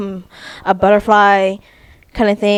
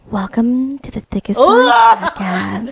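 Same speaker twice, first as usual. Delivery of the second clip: put-on, mock seductive voice; 3 semitones higher than usual. Showing how a podcast intro sounds said seductively: put-on seductive voice. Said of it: "seductively would be like".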